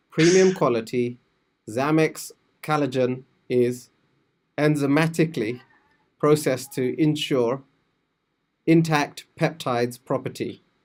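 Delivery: expressionless, level, flat monotone reading. Asked to read a product bullet point aloud, the speaker gives a monotone reading. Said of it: "read this uh, in a very monotone way".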